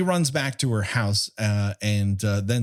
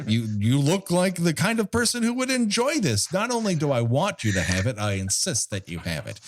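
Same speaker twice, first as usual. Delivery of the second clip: high-pitched carnival barker voice, showman style; 6 semitones higher than usual. Performing a comedy bit for everyone: carnival barker voice. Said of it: "That's my Carnival Barker character".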